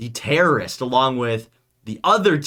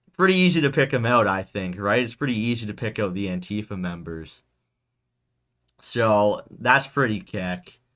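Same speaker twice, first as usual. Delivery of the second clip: ordinary delivery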